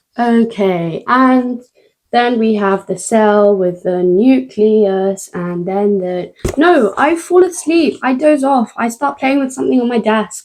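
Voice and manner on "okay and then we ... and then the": very slow, sluggish, stretched-out lecture-style narration. Recalling a half-hour video, imitating the slow talker in it. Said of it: "This person talking so slowly".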